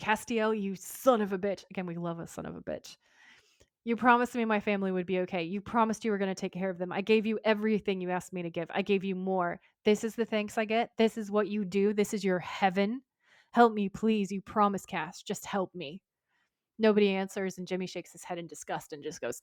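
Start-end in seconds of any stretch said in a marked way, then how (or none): none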